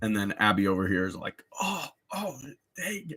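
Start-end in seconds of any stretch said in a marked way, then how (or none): 1.6-3.2 put-on scared voice, quieter. Imitating another trailer character reacting in fear: imitating scared Abby. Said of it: "So everyone's really scared".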